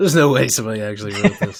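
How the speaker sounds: ordinary delivery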